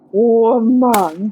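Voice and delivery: imitated caveman voice. Retelling how a gamer reacted, commenters called it: caveman voice. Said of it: ""Caveman voice."".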